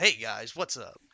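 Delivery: loud on-air radio DJ voice. Describing a guy who always talked like he was doing a radio show; radio host voice. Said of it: "had like radio host voice all the time".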